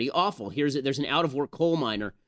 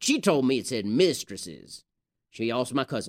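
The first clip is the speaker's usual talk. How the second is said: ordinary talk, nothing marked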